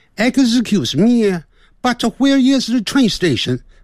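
English spoken with a Shandong accent. Trying out accents on an English phrase, say it with a Shandong accent. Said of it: "这有点像山东的".

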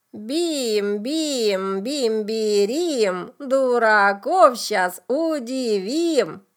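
creaking, croaking witch voice. Narrator reading a tale, voicing a character's rhyme, creaky witch voice. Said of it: "проскрипела она голосом ведьмы".

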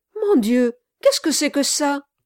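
sudden, loud, high, quick emotional outburst. A man turns quickly and stops his pony, exclaiming with emotion. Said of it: "s'écria avec une certaine émotion".

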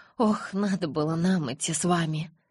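ordinary delivery

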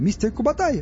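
happily shouting. Stas recognizes Kubatai's familiar voice over the suit speaker: joyful yell. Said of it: "радостно заорал Стас".

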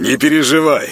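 cheerful, high and loud. The host answers his embarrassed guest, slapping him on the back; cheerful. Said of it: "весело хлопнул его по спине дядя Миша".

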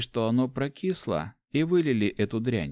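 plain reading voice

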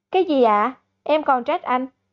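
ordinary delivery

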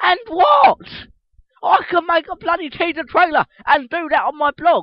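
shrill fed-up outburst. Reacting to the trailer site's keywords: frustrated rant. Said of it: "I'm getting very frustrated right now".

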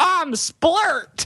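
high cartoon voice. Imagining Splurt as the rabbit on the album cover, in a Splurt cartoon voice. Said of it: "Does he sound like a cartoon character?".

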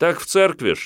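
very high, puffed-up, self-important tone. A boy on a bicycle answers Vera's question: self-important answer. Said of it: "с важностью ответил велосипедист".

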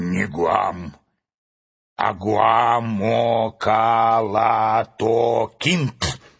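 grouchy, drawn-out, very slow grumpy delivery. The vain owl corrects Urfin's question, with a grumpy retort. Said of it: "сварливо возразил тщеславный филин".

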